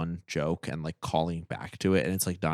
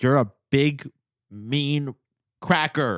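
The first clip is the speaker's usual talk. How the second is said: slow, loud, high-pitched, drawn-out, halting yell; 9 semitones higher, 7 dB louder than usual. Retelling a movie scene where Hank insults Frosty: imitating Hank yelling. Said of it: "and he's, like, yelling at him".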